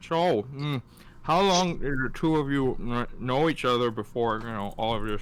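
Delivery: words mushed while chewing a mouthful. In a role-play game, Andromeda looks between the two of them and asks, mouth full. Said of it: "with her mouth full of like seaweed".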